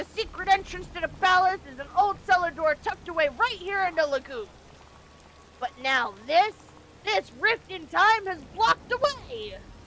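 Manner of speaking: furious anime-style voice. Trying to voice an old man character aloud: angry anime character voice. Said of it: "turned into like an angry anime character voice".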